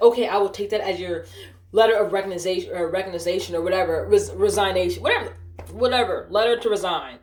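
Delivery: ordinary delivery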